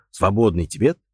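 plain

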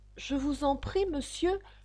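humble, timid tone. Alice asks the passing rabbit for help, in a humble, timid voice. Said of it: "d'une voix humble et timide".

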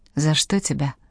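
ordinary delivery

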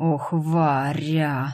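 growling, with a growl. Narrator voicing the dark lord answering Varya, growling. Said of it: "прорычал темный властелин".

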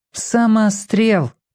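contemptuous, scornful scoff, very high-pitched. A girl hears about a boy caught at a building site, scornful snort. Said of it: "презрительно хмыкнула Римка".

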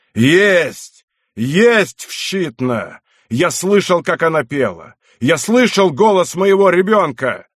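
dreadful, harrowing slow cry, "Есть" drawn out. Narrator reading a parent crying out before the gathered men: exclaiming in a terrible voice. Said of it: "стал восклицать страшным голосом".

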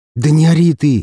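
imploring, beseeching plea. His head aching, he speaks to a woman wrapped up in a blanket, pleading. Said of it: "— взмолился я".

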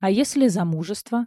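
ordinary delivery

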